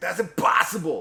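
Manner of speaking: shrill, very high, very loud cry. Retelling a movie scene where a gunman misses: impression of the shooter character. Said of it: "Pretty good impression".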